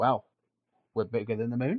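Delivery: put-on Australian accent, Aussie style. Imagining what Australians would say about their country's size: put-on Australian accent. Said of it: "In, in that exact accent".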